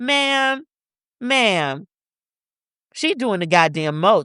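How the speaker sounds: annoyed, heated, angry, pissed-off exclamation. Telling friends about a woman who annoyed her, angry. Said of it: "You hear it in my voice".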